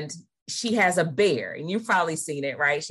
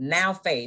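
the word now leaned on hard. Quoting Hebrews 11 on faith, with stress on now. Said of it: "I put emphasis on now".

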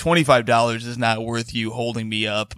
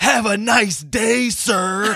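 very high-pitched, drawn-out, heated voice; 10 semitones higher than usual. Retelling a woman in a street screaming match: imitating someone in a screaming match. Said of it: "in a screaming match with".

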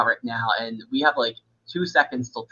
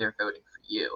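very quiet, hushed whisper, barely audible; 3 semitones lower, 10 dB quieter than usual. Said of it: "Matt whispers to me".

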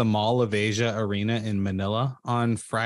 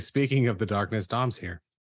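usual speaking voice

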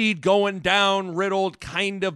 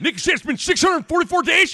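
squeaky, very high-pitched put-on character voice; 10 semitones higher, 4 dB louder than usual. Showing the old Greg Sharp impression, once just one line: Greg Sharp impression. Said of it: "the Greg Sharp was just".

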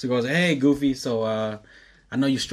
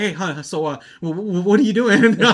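imitated freaked-out voice, higher pitch; 9 semitones higher, 6 dB louder than usual. Retelling how a guy sounded calling a girl, imitating him freaked out. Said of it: "he gets all freaked out".

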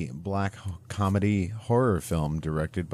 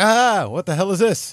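acted scream, higher, louder, slower; 13 semitones higher, 10 dB louder than usual. Recounting opening Mom's crockpot, retelling own scream. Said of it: "And I start screaming".

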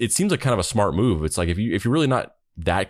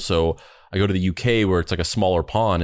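ordinary delivery

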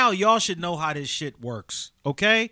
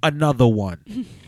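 loud, called-out delivery; 7 semitones lower, 5 dB louder than usual. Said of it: "Let me do it in the [name] voice".

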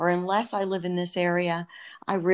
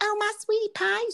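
tiny, very high, itty-bitty little voice. Recalling how a tiny second cousin always said sweetie pie, imitating a tiny little voice. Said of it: "She had this tiny little voice".

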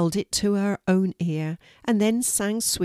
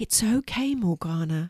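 gentle, tender. Narrator reads Marina answering Morgana, who must go back to school, gently. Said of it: "said Marina gently".

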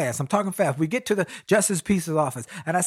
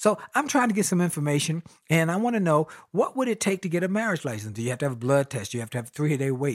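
usual speaking voice

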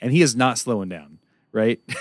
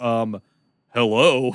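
indignant, peeved, annoyed male voice.

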